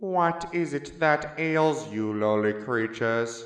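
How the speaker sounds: creepy, looming, scary put-on doctor voice. Retelling arriving at the cathedral as the doctor, addressing the crowd in a scary doctor voice. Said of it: "I ask in my scary doctor voice".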